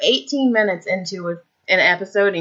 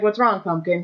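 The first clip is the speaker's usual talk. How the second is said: normal talking voice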